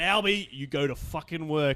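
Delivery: ordinary delivery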